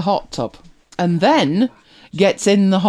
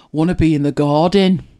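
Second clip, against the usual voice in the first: put-on garden pronounced with a Brummie accent; 2 semitones lower than usual. Retelling a man's line from an ad, the speaker says it in a Birmingham accent. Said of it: "which is how they would pronounce garden in Birmingham".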